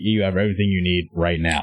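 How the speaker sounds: snapped words. Retelling a Zoom meeting scene from a film: imitating someone snapping. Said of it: "he's just snapping everything he's saying".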